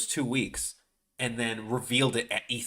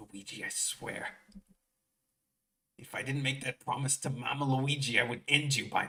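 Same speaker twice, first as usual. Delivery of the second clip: put-on raspy character voice, quieter; 5 dB quieter than usual. Speaker voicing Mario as he threatens Luigi: raspy mock-angry Mario voice. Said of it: "Mario is like all raspy and like angry".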